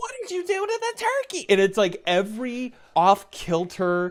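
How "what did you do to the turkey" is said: very high, quick, soft put-on voice. Mocking modern Christmas movies, voicing a movie character in a really high-pitched voice. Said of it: "You did a really high-pitched voice".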